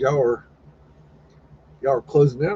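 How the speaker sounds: ordinary delivery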